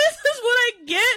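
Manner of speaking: mock angry, very high-pitched, pissed-off complaint. Retelling being released a day after lying: retelling own angry words. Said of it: "So I was so pissed".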